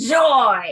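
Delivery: put-on angry yell. Told to yell a word into the chalice well, reenacting it: retelling an angry yell. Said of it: "as angrily as I possibly could".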